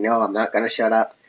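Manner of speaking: normal talking voice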